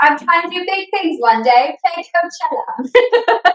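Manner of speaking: put-on British accent. Quoting James Kennedy about big plans, imitating James Kennedy in a British accent. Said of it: "in the accent that you're doing it in".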